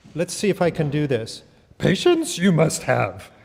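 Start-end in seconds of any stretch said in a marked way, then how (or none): 1.7-3.2 big, loud, animated, swooping mentor voice. Talking about word order, the speaker gives advice as a Yoda impression. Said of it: "advice from Yoda for you".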